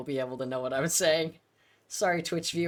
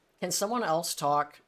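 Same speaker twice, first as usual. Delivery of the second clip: plain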